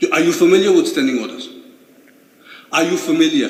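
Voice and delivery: loud, furious, angry barked shout. Scolding someone for not being at work, angry shouting. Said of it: "No, don't shout at me".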